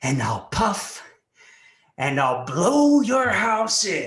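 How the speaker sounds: slow, loud, menacing, taunting voice.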